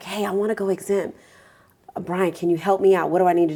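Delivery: sneaky-sounding voice. The speaker role-plays a client asking the tax preparer for help, in a sneaky voice. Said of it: "I have to have my sneaky voice on".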